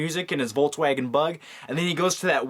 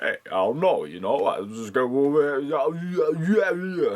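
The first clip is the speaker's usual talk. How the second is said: slow, drawn-out delivery, words dragged out. Doing an impression for the viewers: Sylvester Stallone impression. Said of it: "That was my Sylvester Stallone impression".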